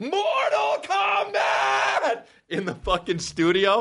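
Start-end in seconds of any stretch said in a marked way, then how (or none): 0.0-2.2 put-on screaming yell. Imitating a voice actor in the studio recording the game title: imitating a studio scream. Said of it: "the guy who screamed Mortal Kombat".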